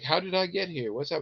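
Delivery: mock-confused woman voice. Retelling what a strange woman said when mom went outside, imitating a confused woman. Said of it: "she seems a little confused".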